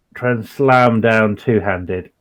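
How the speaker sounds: usual speaking voice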